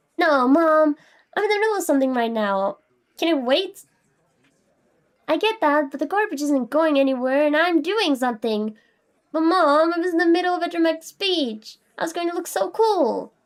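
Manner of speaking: high, whiny chibi voice, drawn out. Interrupted mid-speech, arguing with Mom about the garbage, chibi voice. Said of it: "my normal voice and chibi voice".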